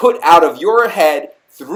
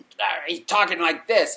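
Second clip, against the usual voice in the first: put-on snarling like an angry dog, quieter; 2 semitones higher, 8 dB quieter than usual. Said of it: "like he's snarling like a mean, angry dog".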